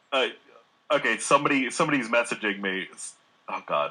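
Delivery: speech broken up by laughter. Apologising while noticing someone is messaging, laughing while talking. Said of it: "I'm laughing right now".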